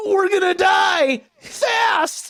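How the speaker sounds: very high, loud, goofy cartoon voice. Recreating a funny moment between two cartoon characters, Shaggy voice. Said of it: "how quickly you can do a Shaggy voice".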